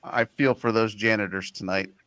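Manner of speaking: plain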